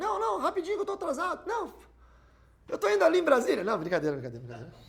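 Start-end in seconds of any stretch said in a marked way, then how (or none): 0.0-3.6 devil voice, pitched very high. Acting out a mock interview with Satan: voicing Satan in a mock interview. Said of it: "Aí Satanás fala bem assim".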